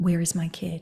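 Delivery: very quiet, hushed, deliberately calm and composed. Retelling walking in while the caregiver is yelling, very quiet voice. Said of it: "very quiet voice".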